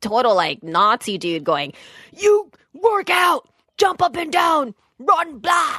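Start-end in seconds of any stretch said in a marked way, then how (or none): 2.1-5.8 very high, drawn-out, shrieking screaming trainer voice. Describing a trainer screaming at a man to work out, retelling a trainer screaming. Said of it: "He's just screaming at them to work out".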